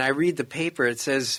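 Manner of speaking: plain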